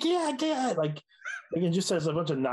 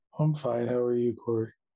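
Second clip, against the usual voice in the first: dull, joyless, depressed flat deadpan monotone; 4 semitones lower than usual. Co-host [name] answers Corey's on-air greeting, sounding depressed. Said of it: "You sound depressed".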